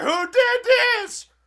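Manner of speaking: overacted shriek, very high-pitched and loud. Retelling a movie scene, imitating Amanda's overacting. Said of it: "overacting just out the wazoo".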